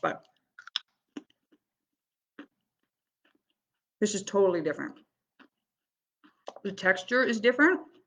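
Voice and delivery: talking with mouth full of food. Tasting a carrot and comparing it, talking with mouth full. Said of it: "I'm talking with my mouth full".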